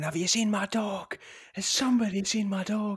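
acted-out, shrill, loud, high-pitched woman's scream. Recounting a November morning in the park, imitating a lady screaming. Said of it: "some lady screaming".

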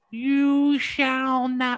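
very high-pitched cartoon-style voice. Recall a Family Guy moment while talking of possessed trees, in a Herbert from Family Guy voice. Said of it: "I used to be able to do a good Herbert fucking voice".

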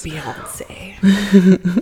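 mock dramatic, put-on delivery. Answering a teasing remark by repeating the name: mock-dramatic voice. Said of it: "fun, dramatic voices".

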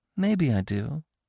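coquettish. Asked by Bambi whether she loves him, Feline answers coy. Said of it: "she answered coyly".

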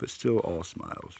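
plain reading voice

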